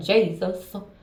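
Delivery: mocking imitation of crying out. Mimicking people who keep calling on Jesus: mocking imitation of people crying Jesus. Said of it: "sound just like that".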